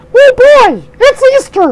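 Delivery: very high, loud, squeaky cartoon mouse voice. Reading a letter from Barry aloud, trying it in a Mickey Mouse voice. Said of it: "I should try this in Mickey".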